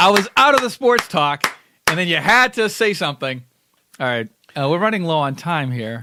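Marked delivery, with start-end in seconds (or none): 0.0-1.5 yelling out loud and high. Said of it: "now I'm yelling at myself".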